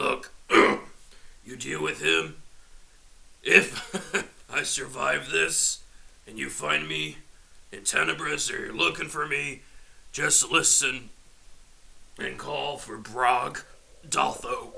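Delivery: hurt, woozy, halting orc voice, words broken up. A hurt orc lying on the ground speaks up, hurt, woozy orc. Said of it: "Orcish man is down on the ground. Clearly hurt. Still kind of woozy from his drugs and whatnot. / Lost a horn, broke my left arm, my left leg. / the orc gentleman realized this is the [name]. / as he'".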